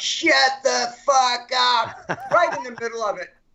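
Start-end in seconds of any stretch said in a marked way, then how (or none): 0.0-2.1 put-on rude heckling yell, slow and drawn-out. Speaker retelling a man at the back of the room yelling out, mock yell. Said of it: "some asshole from the back of the room yells out".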